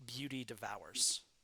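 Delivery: normal talking voice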